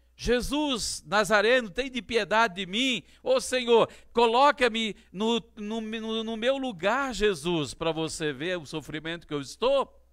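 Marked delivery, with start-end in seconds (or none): 0.2-7.7 loud, high-pitched begging, pleading cry, called out hard. Retelling how the blind man shouted to Jesus: retelling a shouted plea. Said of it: "ele gritou".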